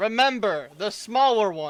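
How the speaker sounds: high, very loud yell. Calling after a character about to turn the corner: yelling. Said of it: "I yell".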